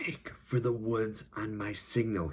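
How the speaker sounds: whispered through clenched teeth. Reading a story aloud, a hurt boy gives his sister a signal: whispering through clenched teeth. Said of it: "he whispered through his clenched teeth".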